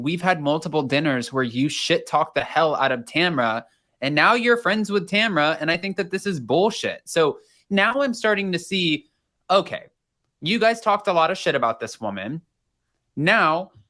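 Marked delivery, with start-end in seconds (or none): none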